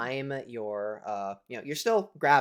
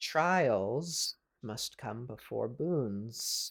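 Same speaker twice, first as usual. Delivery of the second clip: hushed, quiet, sibilant voice with drawn-out s sounds. Voicing a voice the listeners hear in their minds, quiet voice, drawn-out s's. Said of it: "it's just quiet and elongating its s's".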